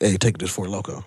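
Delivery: plain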